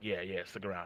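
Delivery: soft, low-pitched pleading. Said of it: "like, begging folks".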